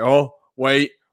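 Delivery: loud, excited and urgent. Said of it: "and I'm like".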